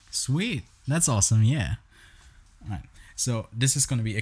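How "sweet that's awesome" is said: sarcastic, mocking tone. Reacting to another speaker's list of movies watched: sarcastic. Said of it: "That was so sarcastic".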